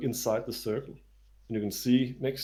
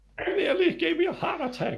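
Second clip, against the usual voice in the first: put-on old woman character voice, higher; 4 dB louder than usual. Voicing a startled old lady met by the river: old lady character voice. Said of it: "it's an old lady".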